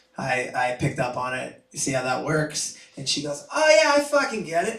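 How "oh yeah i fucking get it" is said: put-on thick Boston accent, pitched way up. Retelling a woman's reply to the speaker, in a thick Boston accent. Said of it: "She had a thick Boston accent".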